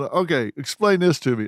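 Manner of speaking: ordinary delivery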